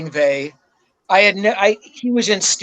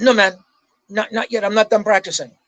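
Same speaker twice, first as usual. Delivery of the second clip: put-on Swedish accent laid on thick. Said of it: "I'm trying to emulate his Swedish accent".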